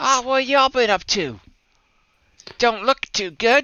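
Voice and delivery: very high, loud little street urchin voice. Voicing a street urchin kid looking up at the group: street urchin voice. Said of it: "little street urchin kind of popper voice".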